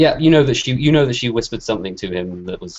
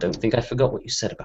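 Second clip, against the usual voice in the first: soft, hushed whisper; 7 dB quieter than usual. Narrating a game scene, she leans in to the new Marshal, whispering. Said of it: "she whispers to you, just so you can hear".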